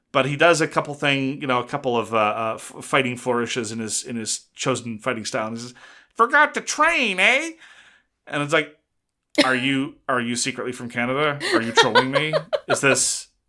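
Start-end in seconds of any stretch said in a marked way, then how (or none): 6.1-7.4 very high, obnoxious, whiny nasal taunting tone. Speaker quotes a fighter from France's victory line: put-on nasal, whiny, obnoxious voice. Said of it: "he's nasally and whiny and obnoxious".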